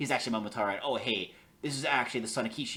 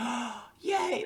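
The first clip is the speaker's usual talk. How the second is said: play-acted, very high, giddy, excited, delighted cheer; 13 semitones higher than usual. Retelling a character's reaction to a fortune: imitating an excited character. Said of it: "Alec is, like, so excited".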